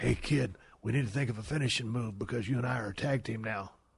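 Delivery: low, soft, quiet rasp. Recalling his wrestling days, the speaker quotes Flying Brian's raspy voice. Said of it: "with that raspy voice".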